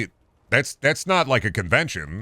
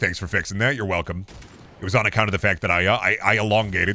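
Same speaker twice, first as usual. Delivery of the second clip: plain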